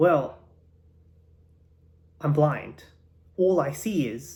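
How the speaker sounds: slow, mildly fed-up, a bit frustrated reply. Telling a joke, voicing the witness replying to the bartender: acting a bit frustrated. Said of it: "a bit frustrated at this point".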